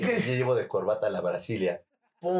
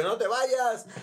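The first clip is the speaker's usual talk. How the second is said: very high-pitched, desperate pleading; 13 semitones higher than usual. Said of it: "el güey así como que quería como que agarrar el cofre".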